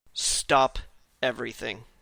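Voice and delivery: deeply solemn, very grave tone. Retelling a man who grabs his desk firmly, imitating his very solemn voice. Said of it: "says in a very very solemn voice".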